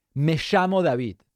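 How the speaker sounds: Spanish spoken with an Argentinian accent. Answering a viewer comment about his Spanish accent, speaking with an Argentinian Spanish accent. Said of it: "that's how we talk".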